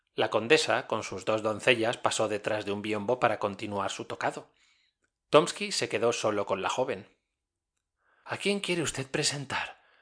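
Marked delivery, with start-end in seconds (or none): 8.3-9.8 hushed, quiet, low voice. Isabel Ivanovna, left alone with Tomsky, asks in a low voice. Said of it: "preguntó en voz baja Isabel Ivanovna".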